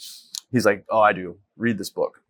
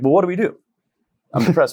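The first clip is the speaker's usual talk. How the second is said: mock pointedly sarcastic tone, raised and pitched up; 9 semitones higher, 6 dB louder than usual. Retelling own reply to a doctor's diagnosis: retelling a sarcastic reply. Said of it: "I just kinda got sarcastic with them".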